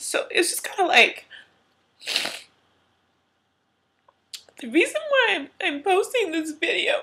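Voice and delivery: tearful, high-pitched crying voice, talking through tears. Explaining to viewers why they are posting this video; crying while talking. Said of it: "I'm crying way too much".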